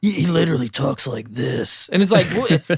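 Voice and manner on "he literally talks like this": super deep, gravelly voice dropped way down. Imitating an actor whose voice seems not to match his face: Aaron Paul impression, super deep gravelly. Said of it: "I have to do that 'cause clearly my voice is way higher".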